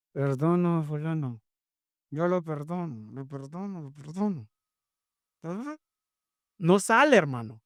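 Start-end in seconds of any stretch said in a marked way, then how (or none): 0.1-4.4 reluctant, grudging delivery through gritted teeth. Demonstrating a reluctant way of saying a line in spanish: said grudgingly. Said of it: "diciendo a regañadientes".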